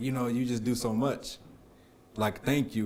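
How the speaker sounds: play-acted tearful, crying voice. Retelling a pregnant wife's crying thanks: imitating his wife crying. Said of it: "she started crying, and she was like".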